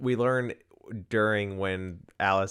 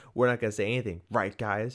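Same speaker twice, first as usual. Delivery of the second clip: ordinary delivery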